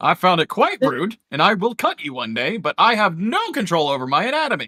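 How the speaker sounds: high, swooping talking sword voice. Voicing a talking sword that complains to a player: talking sword voice. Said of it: "the sword talks. It's like".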